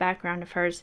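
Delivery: ordinary delivery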